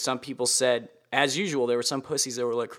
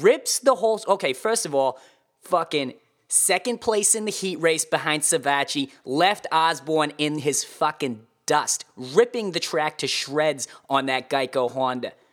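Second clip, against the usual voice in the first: fake Boston accent, higher and louder; 3 semitones higher, 4 dB louder than usual. Starting a race report on a rider in a put-on boston accent. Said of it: "[name]'s Boston accent race report".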